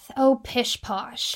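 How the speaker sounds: soft, muttered grumbling under the breath. Remembering a man who disliked photos, the speaker imitates his grumble under his breath. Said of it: "he'd grumble under his breath".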